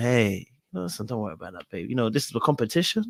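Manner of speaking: honeyed, easygoing, smooth, sweet-talking tone. Retelling what a contestant said to a woman: imitating Mizell's sweet smooth tone. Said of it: "that nice rum, sweet tone about him".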